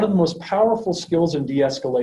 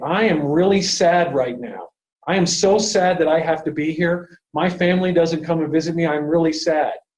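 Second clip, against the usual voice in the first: normal talking voice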